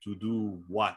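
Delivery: lifeless, emptied-out, dead flat, despondent acted delivery. Retelling a character's reply to a psychologist: imitating a dead, despondent voice. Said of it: "He just sounds dead when he answers her".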